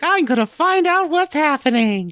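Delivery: very high squeaky cartoon voice. Narrating a game, voicing Sora's line but landing on a Mickey Mouse voice. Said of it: "that's more of a Mickey Mouse voice".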